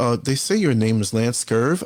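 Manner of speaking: put-on condescending voice. Retelling what a journalist said on meeting him: imitating a condescending tone. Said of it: "in a very condescending ma-, way".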